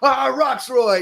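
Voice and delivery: very high, over-eager, gushing host voice. Retelling how a man greeted another, in his best Jimmy Fallon impression. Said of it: "do his best Jimmy Fallon impression".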